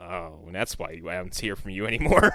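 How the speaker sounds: slow, unhurried, unthreatening drawl with no menace. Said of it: "he opened his mouth and was like".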